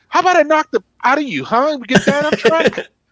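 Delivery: very high, piping, taunting put-on voice. Retelling a live interview where Mike Tyson snaps at the interviewer: imitating Mike Tyson. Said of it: "He goes".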